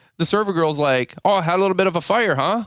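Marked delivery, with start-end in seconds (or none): 1.3-2.7 put-on Boston-accented speech. Retelling what the server girl said after a fire at the restaurant, Boston, Rhode Island accent. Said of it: "In her like Boston, Rhode Island accent".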